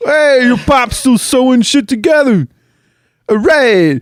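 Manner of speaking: very high, bad attempted Boston accent. Playing a character in a bit with a co-host, attempted boston accent. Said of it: "Do we sound like Boston or what?".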